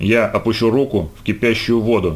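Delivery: ordinary delivery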